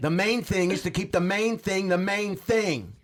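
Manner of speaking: angry, heated reading. Reading a sticker quote aloud after being asked to: angry. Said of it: "can you read this one angry?".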